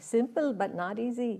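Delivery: imitated Indian accent. Speaker repeats a saying the way he used to say it, in his Indian accent. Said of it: "he would say it with his Indian accent".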